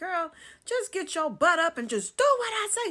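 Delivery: very high-pitched, loud hollering. Speaker retells what her sister said to her: imitating her sister hollering. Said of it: "She started hollering at me".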